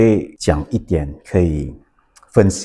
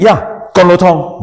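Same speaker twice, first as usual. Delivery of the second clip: mock self-assured, certain, slow, very confident tone; 11 semitones higher, 4 dB louder than usual. Retelling ordering noodles from the uncle: imitating own confident reply. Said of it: "very confidently".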